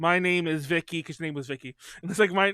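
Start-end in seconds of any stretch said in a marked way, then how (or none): 0.0-1.0 put-on flat, monotone, machine-like girl voice. Describing a sitcom about a robot girl, showing how she talks: Vicky robot girl voice. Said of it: "she talks like this".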